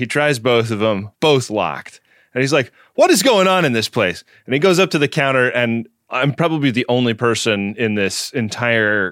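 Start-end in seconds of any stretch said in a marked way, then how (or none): 2.9-4.2 play-acted irritated, exasperated, huffy, pitched-up tone. Retelling what a man who came in in a huff said: imitating a huffy man. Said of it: "A guy comes in in a huff".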